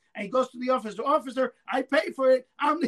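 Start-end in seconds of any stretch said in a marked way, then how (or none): 1.1-2.9 loud, shrieked screaming. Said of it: "he's screaming in the store".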